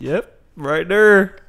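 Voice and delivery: loud, high put-on Texan accent. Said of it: "you went from fucking Australian to Texan".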